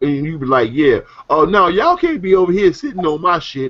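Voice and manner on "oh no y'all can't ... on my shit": put-on grandmother character voice, pitched high. Speaker retelling what their grandma would say to people at her place, imitating their grandma. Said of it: "That's my grandma".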